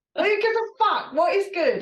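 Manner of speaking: very high-pitched, shrill shouting. Speaker in a heated conversation, apologizing for it afterwards: shouting. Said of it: "sorry, I'm shouting".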